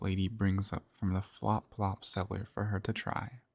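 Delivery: ordinary delivery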